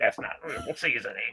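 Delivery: breathy half-whisper. Joking about dyed snack seasoning, doing an RFK Junior impression. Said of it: "That was a good impersonation".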